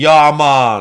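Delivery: put-on Jamaican accent. Mocking a character in a Rastafarian hat: mock Jamaican accent. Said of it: "And they all talk like that as well".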